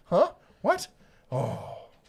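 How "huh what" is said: play-acted, loud, very high, bewildered, confused blurt. Imitating a viewer who missed an email: imitating someone confused. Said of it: "She's totally confused".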